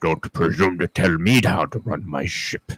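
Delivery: bad put-on Russian accent. Quoting a movie line: bad Sean Connery impression with a Russian accent. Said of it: "a really bad Sean Connery doing a Russian ac-, accent".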